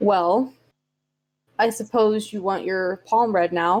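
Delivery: no-nonsense, matter-of-fact, businesslike delivery. Describing a woman offering to read your palm, imitating her matter-of-fact business tone. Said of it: "It's like a matter of fact, business mode".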